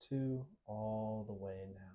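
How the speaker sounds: deliberately slowed, unhurried, low, hushed delivery. Counting down for listeners while they notice their bodies, speaking with a slowed pace. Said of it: "I am lowering the speed of my voice".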